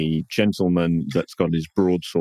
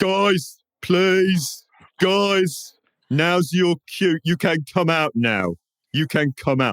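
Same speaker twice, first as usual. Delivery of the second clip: very high, slow, drawn-out shouting out; 12 semitones higher than usual. Narrating a scene, the storyteller voices a character shouting out to the crowd. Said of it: "he once again he shouts out to the crowd".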